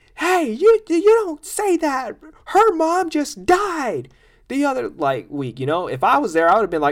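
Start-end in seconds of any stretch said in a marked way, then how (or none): 0.2-4.9 very high, drawn-out, swooping heckler yell. Retelling how someone in a show's crowd yelled over a joke; retelling a crowd member's yell. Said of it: "somebody in the crowd yelled out".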